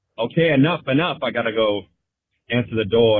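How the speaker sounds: plain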